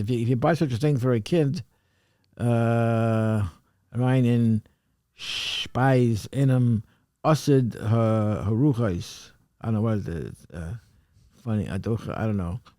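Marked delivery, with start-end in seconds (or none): 3.9-9.3 slow, halting, word-by-word reading aloud in Yiddish. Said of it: "if you could sort of read that".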